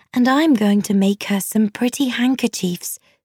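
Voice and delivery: ordinary talk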